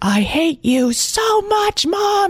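put-on very high, very slow rising yell. A mother retelling her son yelling at her from his room, retelling a yell. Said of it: "He was yelling like".

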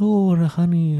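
rough, high-pitched cartoon bear voice attempt. Speaker attempts a Winnie the Pooh impression: Winnie the Pooh voice. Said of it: "I was trying to do Winnie the Pooh where he's like".

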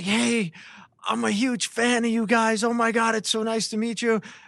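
super excited gush. Retelling a first meeting with a young fan: imitating Scott super excited. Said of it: "He's super excited".

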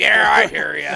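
very loud, cranky, grumbly voice. Retelling what a passing hunter answered: grumbly Papa Smurf voice. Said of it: "like all grumbly, like Papa Smurf".

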